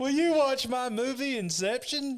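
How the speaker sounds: voice way up high and loud. Asking the audience to watch a film as an announced guest: Christopher Nolan impression. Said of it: "Christopher Nolan's on the show tonight".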